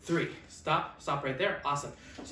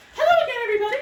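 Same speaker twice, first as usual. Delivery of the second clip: very high, loud, squealing duck puppet voice; 11 dB louder than usual. Voicing a duck puppet greeting the audience: voicing Quackers the duck puppet. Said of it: "put your hands together for Quackers the Quackaloon".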